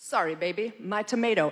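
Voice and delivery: silky, smooth, very sexy seductive voice. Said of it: "in the most sexy, smooth [name] voice".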